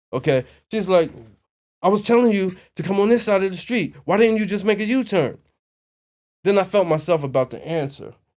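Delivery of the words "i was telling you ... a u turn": mock, high, all-caps screaming at top of lungs. Retelling a woman in the street yelling at the speaker after a u-turn: retelling her yelling at full lungs. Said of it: "This is all at the top of her lungs".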